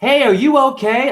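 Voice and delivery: very high, play-acted shout. Retelling a passerby calling out to them on the rocks: imitating someone yelling. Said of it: "yelling at me".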